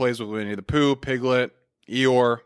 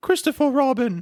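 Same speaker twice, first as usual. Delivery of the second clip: very high, squeaky elf voice; 12 semitones higher than usual. Retelling a character's first words to his old friend, in a Dobby-like voice. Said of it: "That sounds more like Dobby".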